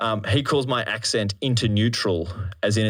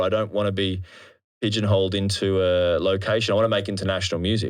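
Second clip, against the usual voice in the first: ordinary talk, nothing marked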